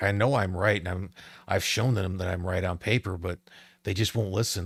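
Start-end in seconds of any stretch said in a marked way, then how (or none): none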